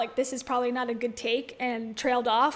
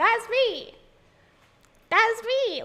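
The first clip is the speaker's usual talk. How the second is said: odd voice, very high and very slow; 10 semitones higher, 4 dB louder than usual. Imitating a woman she watches, mocking her weird voice. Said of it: "She has that weird voice sometimes".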